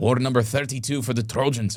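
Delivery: put-on Irish accent, sounds Scottish. Announcing an Irish kicker for the Trojans; put-on accent that comes out Scottish. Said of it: "that's more of a Scottish accent".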